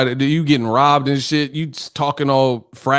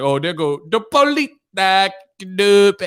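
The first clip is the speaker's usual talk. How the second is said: mock strange delivery of "police", higher pitched; 5 semitones higher than usual. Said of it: "Ain't nobody called twelve no police".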